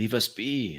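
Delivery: broken, hesitant phrasing. Narrating an unseen voice answering the party, with a slightly higher pitch. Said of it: "A slightly higher pitch".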